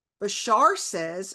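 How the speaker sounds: ordinary talk, nothing marked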